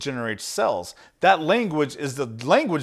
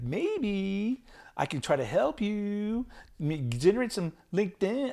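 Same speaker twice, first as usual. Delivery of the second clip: weak, soft, slow put-on California accent; 6 semitones higher, 8 dB quieter than usual. Speaker tries a California voice for a LinkedIn pitch: weak put-on California accent. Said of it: "have a California voice".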